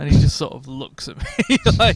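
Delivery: ordinary delivery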